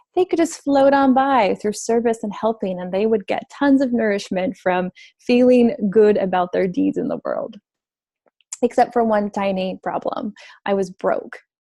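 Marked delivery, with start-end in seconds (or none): 0.1-7.5 light, mocking, sarcastic delivery. Recalling old beliefs about helpers and money: sarcastic tone. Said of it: "you can hear the tone of my voice, almost as sarcastic".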